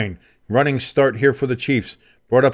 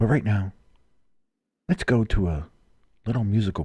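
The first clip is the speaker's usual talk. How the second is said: put-on sleepy radio voice, lower, quieter; 3 semitones lower, 5 dB quieter than usual. Imagining NPR covering the AFC Championship, the speaker does: imitating a sleepy NPR host. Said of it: "the N P R guys who always are so sleepy".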